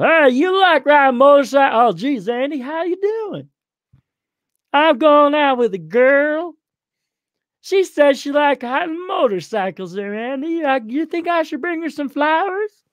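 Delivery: high, goofy Southern country bumpkin voice. Speaker acts out a short, skinny guy talking to Andy, in a Gomer impression. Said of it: "Now do I sound like Gomer from the Andy Griffith?".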